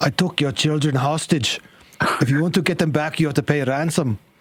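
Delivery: rough put-on Scottish accent. Acting out a friend's reply while retelling a story, in a Scottish accent. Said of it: "This is now a Scottish accent".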